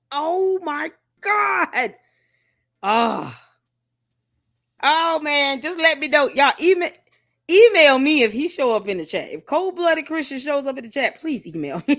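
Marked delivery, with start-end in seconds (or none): 0.1-1.9 mock shocked, high, jaw-dropped screaming outburst. Retelling reading a surprising email, jaw dropped: imitating own screaming. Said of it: "I started screaming like".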